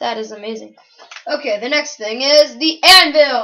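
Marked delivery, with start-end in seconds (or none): 1.3-3.4 very loud, full-throated screaming at full volume. Showing items in a game, the speaker moves to the next one, screaming really loud. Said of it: "I do realize I'm screaming really loud".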